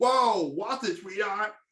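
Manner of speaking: put-on New York accent, villain-style character voice. Retelling a trailer scene where Penguin comes in: Penguin's New York accent. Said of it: "Penguin comes in and he's like".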